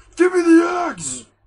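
shrill, booming, very high, very loud raging shout. Retelling a man's outburst, imitating a raging shout. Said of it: "He goes on a rage".

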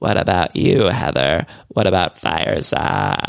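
slow, dragged-out, extreme creaky vocal fry. Retelling how Casita asked Heather about fireside: Casita's extreme vocal fry. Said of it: "she had the extreme vocal fry".

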